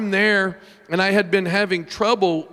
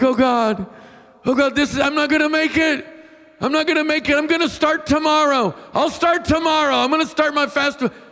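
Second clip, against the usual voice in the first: put-on acted babyish, high-pitched whining voice; 9 semitones higher than usual. Retelling own prayer with hands over face: imitating own whiny prayer. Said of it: "I'm a whiny baby at prayer".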